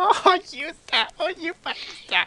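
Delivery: put-on hysterical laughing. Retelling a clip where the wife laughs: imitating hysterical laughing. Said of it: "she's just, like, hysterical".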